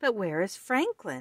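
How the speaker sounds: ordinary delivery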